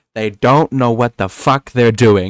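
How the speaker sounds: swear word leaned into, strongly stressed. Retelling a clip where Trump leans into a swear: Trump leaning into the swear. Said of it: "he leans into it".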